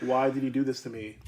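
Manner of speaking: usual speaking voice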